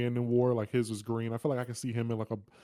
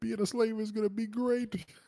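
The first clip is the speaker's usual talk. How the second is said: very high, gleeful, over-the-moon delight; 11 semitones higher than usual. Retelling what a character tells the people: imitating gleeful delight. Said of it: "he's saying it like it's the greatest thing ever".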